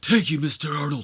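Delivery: loud, hoarse, strained voice. Voicing a wrestler thanking Mister Arnold: John Laurinaitis-y voice. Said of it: "He's got a very John Laurinaitis-y voice".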